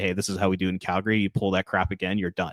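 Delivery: ordinary talk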